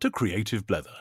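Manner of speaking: loud, booming voiceover announcer voice.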